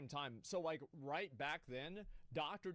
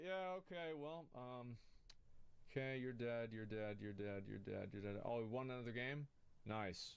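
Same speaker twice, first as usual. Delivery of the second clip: mock very relaxed, easygoing, unbothered gamer voice; 4 semitones lower, 8 dB quieter than usual. Imitating Shroud winning games while very relaxed: imitating a very relaxed gamer. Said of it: "he was very relaxed".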